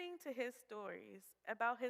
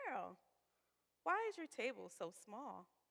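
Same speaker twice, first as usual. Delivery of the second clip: put-on, sweet Southern accent. Retelling what a woman in the kitchen asked: imitating a sweet southern voice. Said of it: "asked me in her sweet Southern voice".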